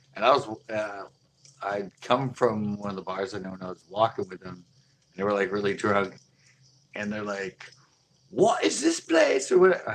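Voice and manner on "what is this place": very high-pitched, bad New Zealand accent. Retelling what drunk guys from New Zealand asked: attempted New Zealand accent. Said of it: "I can't do the right accent anyway".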